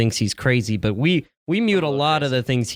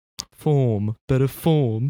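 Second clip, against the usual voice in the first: fake British accent on form. Discussing football picks, the speaker slips into a put-on British accent. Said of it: "This is my British accent".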